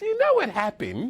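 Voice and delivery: put-on very high-pitched, very British accent. Retelling what a woman said on opening her eyes, in a very British accent. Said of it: "That accent".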